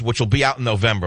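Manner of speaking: plain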